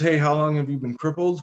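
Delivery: ordinary delivery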